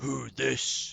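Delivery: very loud, growling orc voice, broken speech. Voicing an orc challenging a stranger on the trail: orc growling in broken Common. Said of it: "one of them growls at you".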